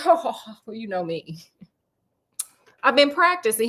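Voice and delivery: mock amused, chuckling through the words. Narrating a story, Sherlock answers Watson, chuckling while talking. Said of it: "Sherlock is chuckling".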